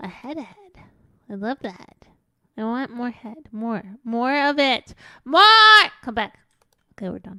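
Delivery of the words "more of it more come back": very loud, thrilled, excited screaming. Calling out to the group, screaming. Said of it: "Sorry for screaming".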